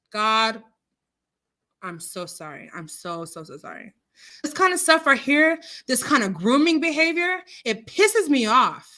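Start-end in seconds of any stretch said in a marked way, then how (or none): 4.4-8.7 pissed off, loud, rising, heated angry rant. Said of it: "I'm gonna calm down".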